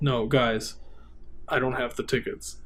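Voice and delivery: put-on low, dry, flat, utterly straight deadpan. Retelling his reply to the giggling group; retelling a deadpan line. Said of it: "he's just deadpan, like deadpan".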